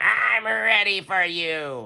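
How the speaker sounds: put-on raspy old woman voice. Narrator reads old Miz McGriz greeting the cubs from the doorway: gravelly Miz McGriz voice. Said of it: "She said in a gravelly voice".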